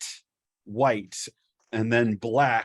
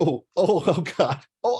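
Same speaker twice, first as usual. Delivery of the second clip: mock, pitched-up laughing while groaning in pain; 7 semitones higher, 3 dB louder than usual. Retelling how it all hurt after a swift walk, retelling laughing through the hurt. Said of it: "it was like laughing and going".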